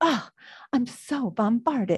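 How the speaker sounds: theatrical, over-the-top, overwhelmed dramatic reading. Suggesting a line a child could say to a parent, as a dramatic reading. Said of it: "my dramatic reading of that".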